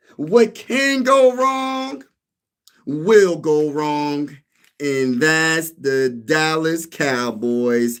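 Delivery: deliberate, very slow delivery, every word dragged out. Putting on a hat to mock Cowboys fans: Stephen A. Smith impression. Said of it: "What does Stephen A. Smith say?".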